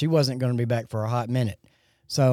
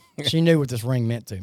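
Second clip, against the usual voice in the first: ordinary talk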